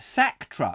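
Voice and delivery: plain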